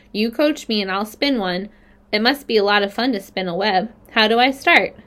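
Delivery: plain reading voice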